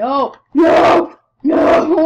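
high, loud screaming.

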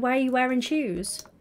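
normal talking voice

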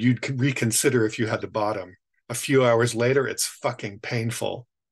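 ordinary delivery

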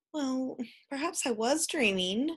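reluctant, grudging tone. Narrator reads a mother conceding to the laughing father: reluctant admission. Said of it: "admitted the mother reluctantly".

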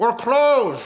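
voice dulled behind glass. Retelling a store employee answering through the glass, muffled through-the-glass voice. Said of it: "in a muffled through the glass voice".

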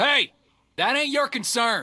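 loud gruff voice.

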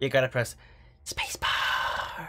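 whispered.

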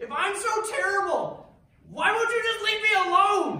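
shrill, high, booming, loud, exasperated, frustrated yell. Speaker quotes a man who yelled at her in frustration, retelling a frustrated yell. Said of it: "he just yells at me".

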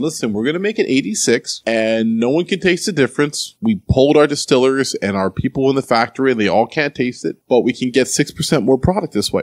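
usual speaking voice

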